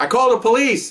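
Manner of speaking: acted, high, shrill yell. Retelling how someone in the crowd yelled: imitating someone yelling. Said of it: "someone yells out".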